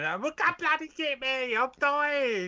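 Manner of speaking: very high, very slow, put-on panicked wail. Describing playing co-op with friends: imitating friends screaming.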